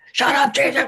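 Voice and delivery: angry, high-pitched yell. Acting out an owner at the door: imitating an owner yelling. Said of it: "they yell at the dog".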